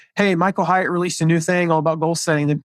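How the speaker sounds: ordinary delivery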